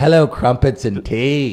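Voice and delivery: stock jokey British accent. Greeting a guest from across the pond: mock British accent. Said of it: "one human that I meet or interact with impersonates me".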